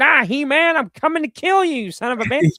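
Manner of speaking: very high, loud, squealing villain voice. Recalling ripping open his new toy in the car, doing a stupid Skeletor voice. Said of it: "doing, like, stupid voices with them".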